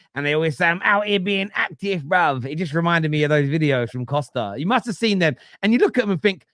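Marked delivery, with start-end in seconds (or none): 0.7-2.5 put-on London street-kid accent. Speaker imitates middle-class kids from Instagram videos, in a put-on Hackney accent. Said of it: "they put on an accent like like they're from Hackney".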